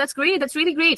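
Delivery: genuinely thrilled, excited, enthusiastic delivery. Showing how tone changes meaning, the speaker demonstrates the phrase excited. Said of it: "Excited English".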